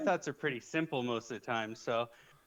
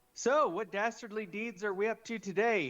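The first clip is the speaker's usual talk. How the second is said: more volume than needed; 7 semitones higher than usual. Playing their character in a tabletop game: too loud. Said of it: "in kind of a more loud than I should voice".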